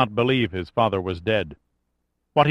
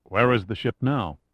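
ordinary delivery

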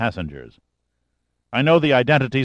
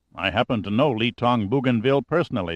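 plain

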